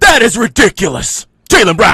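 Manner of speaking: shrill, loud, booming, high hyped announcer call. Retelling a broadcaster's dunk call in the finals: imitating JJ's dunk call. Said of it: "J J does this call".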